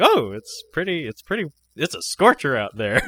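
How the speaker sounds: loud, cheery, breezy, jolly conversational tone. Retelling how a man comes into the church making small talk, imitating a jolly man. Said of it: "he comes into the church all jolly".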